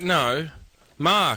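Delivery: heavy stress placed on Mark. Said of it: "If I say my name's Mark".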